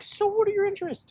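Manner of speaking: put-on very high, generic girly voice. Retelling her first question at Thanksgiving, in a generic girl voice. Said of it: "his generic girl voice".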